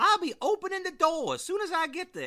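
put-on very high, old-timey 1800s maid voice. Recounting a scene where someone knocks on a door: old-timey 1800s maid voice. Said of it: "like the old maid from the 1800s".

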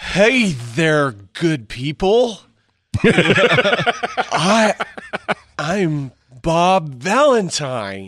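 very slow, high, loud, every word drawn out. Imitating the actor who would play a friend in a series: imitating Crispin Glover. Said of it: "it'd be more like".

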